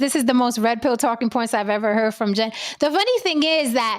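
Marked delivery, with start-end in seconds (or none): none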